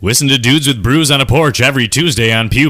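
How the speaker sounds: loud, high promo announcer voice. Asked by the other speaker, the host speaks in an announcer voice. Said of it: "Do it in like your your like announcer voice".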